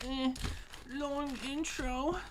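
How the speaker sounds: mocking put-on complaining voice. Making fun of Boomer complaining about a long intro: mocking Boomer's complaint. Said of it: "making fun of Boomer 'cause he was like".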